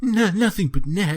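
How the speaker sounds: very high, shrill, loud cartoon-villain voice. Retelling an episode with Ash and crew, speaker quotes James: total James voice. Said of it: "like in a total James voice".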